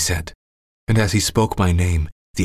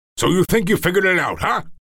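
very high-pitched, shrill, furious, angry scream; 12 semitones higher than usual. Narrator voicing a man screaming right in the narrator's face, yelling. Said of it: "he yelled".

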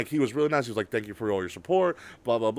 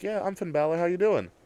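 put-on peaceful, unbothered, serene, zen-like calm; 4 semitones higher than usual. Retelling the wrestler's answer when asked who he was: Finn Balor in zen-like calm. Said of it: "in this zen-like peace and is like".

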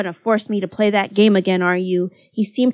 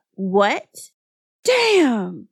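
long, dragged-out, pitched-up swear. The twins react to Haruhi admitting a stranger drove her home, cursing. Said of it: "cursed the twins".

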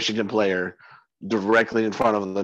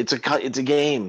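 ordinary talk

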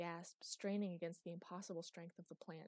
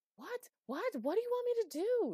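very high, very loud, shrill yell; 9 dB louder than usual. Anouk answers Chloe, caught by a vine, shouting back. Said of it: "She shouted back".

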